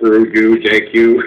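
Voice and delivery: slow, flat, robot-like monotone. Speaker acts out another man's reply to him: robotic monologue voice. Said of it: "in his robotic monologue voice".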